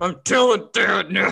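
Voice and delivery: sobbing, furious, crying rage outburst. Speaker recalls Jairus crying after their fights, imitating Jairus crying in rage. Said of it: "crying rage voice".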